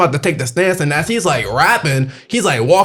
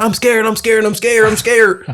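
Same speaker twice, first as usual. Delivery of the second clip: mock scared, high, frightened, repeated pleading; 5 semitones higher than usual. Retelling a chase around a car, quoting the man begging; imitating someone scared, pleading. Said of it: "He was like".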